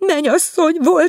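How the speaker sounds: loud gasping, very high pitch. Asked what she dreamed, the visiting woman answers: gasping. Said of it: "zihálta".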